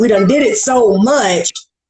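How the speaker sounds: ordinary talk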